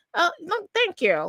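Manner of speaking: polished professional news voice. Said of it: "he had the news voice".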